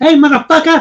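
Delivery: squeezed, strained, really high-pitched voice. Recalling getting kicked in the nuts, high-pitched Joe Pesci voice. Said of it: "I sounded more like Joe Pesci when I got kicked in the nuts. ... really high, uh, high pitched".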